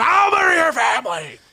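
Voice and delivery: shrill, very high, loud scream. Retelling screaming at a child outside a rival basketball game: imitating a scream.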